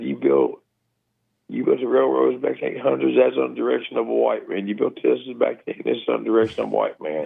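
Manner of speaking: normal talking voice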